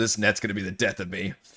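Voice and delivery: soft, low, muttered grumble under the breath. Storyteller voices a man who just messed up his net, grumbling. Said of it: "he grumbles".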